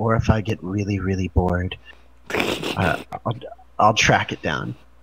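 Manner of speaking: low whisper, close to the ear. A player's character leans in and speaks into another character's ear, whispering. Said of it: "she whispers in Amelia's ear".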